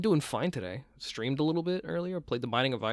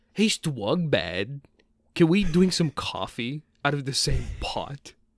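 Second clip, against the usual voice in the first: loud, deliberately terrible delivery; 6 dB louder than usual. Asked who does a better Homestar, trying it anyway: terrible Homestar Runner impression. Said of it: "I do terrible Homestar impression".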